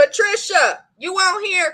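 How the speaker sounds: high-pitched hollering, a calling-out yell. Calling out to the group's absent co-owner as if she could hear, yelling. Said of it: "I'm yelling like she can hear me".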